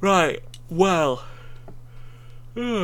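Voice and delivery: words stretched out while yawning. Host opening the deep thoughts segment, yawning. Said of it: "I'm yawning".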